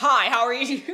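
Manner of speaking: extremely loud, high, over-the-top delivery. Retelling how Kai greets them at home: imitating someone talking extremely loudly. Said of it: "Kai's been talking extremely loudly".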